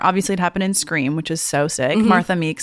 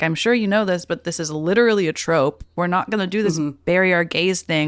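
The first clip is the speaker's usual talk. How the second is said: ordinary talk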